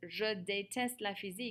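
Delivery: plain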